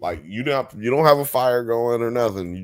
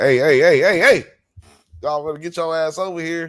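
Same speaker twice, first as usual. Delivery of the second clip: put-on high old-lady voice; 7 semitones higher, 4 dB louder than usual. Retelling how the old lady hassles the detectives: imitating the old lady. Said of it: "the old lady is still messing with these detectives, like".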